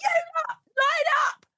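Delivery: very high, shrill, screaming shout. Retelling calling the kids downstairs, imitating screaming at them. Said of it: "I literally screamed up to the kids".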